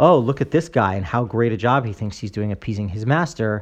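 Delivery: ordinary talk, nothing marked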